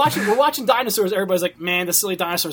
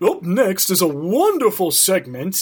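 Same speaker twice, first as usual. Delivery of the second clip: snooty rich man voice, much slower. Recalling a Claymation Christmas dinosaur host introducing a segment, Thurston Howell voice. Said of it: "It's supposed to be Thurston Howell".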